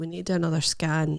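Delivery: ordinary talk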